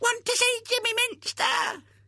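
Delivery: very high, squeaky put-on voice, squealing. A boy hanging over a gate answers a girl telling him to go away, high-pitched squeaky voice. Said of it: "adopted a high-pitched, squeaky voice".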